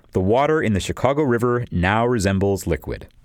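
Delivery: ordinary delivery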